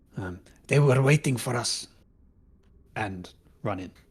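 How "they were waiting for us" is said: saying loudly in a character voice. Shooting at enemies while running in: saying loudly in character. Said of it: "I say loudly".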